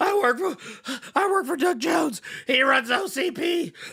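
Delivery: loud pleading shout. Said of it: "He's like".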